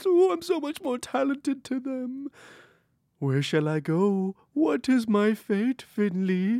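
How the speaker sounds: high, eerie, spooky put-on ghost voice. Speaking to Finley in character, in a spooky put-on voice. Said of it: "You're getting you really like this voice".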